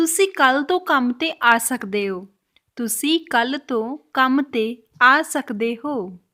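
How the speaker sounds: very slow, careful, word-by-word Punjabi.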